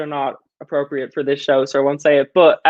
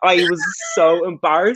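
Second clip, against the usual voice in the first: usual speaking voice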